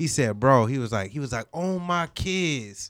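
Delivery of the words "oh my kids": put-on New York accent, like a born New Yorker. Retelling what a cameraman from New York said: New York accent. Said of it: "that's how they say it in New York".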